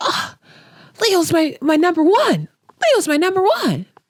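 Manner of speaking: mock very high, frantic, swooping panic. Retelling Hannah hearing the news: imitating someone freaking out. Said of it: "she was freaking out".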